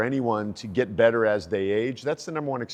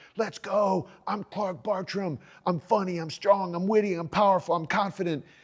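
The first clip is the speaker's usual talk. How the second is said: high-pitched hyped-up screaming. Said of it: "I'm clapping, I'm screaming, I'm like".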